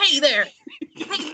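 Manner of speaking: high, stern, scolding mother's voice. Recounting facing literal thugs, speaker retells using a mom voice. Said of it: "I used like a mom voice".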